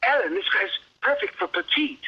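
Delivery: put-on heavy, thick English accent, pitched very high. Retell what he says to the movie's casting director, in a really thick English accent. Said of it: "he's got this really thick English accent".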